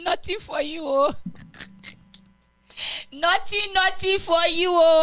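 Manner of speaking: put-on Nigerian English accent. Joking about being illegal and getting no job: Nigerian accent. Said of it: "I have to go into the Nigerian accent for you".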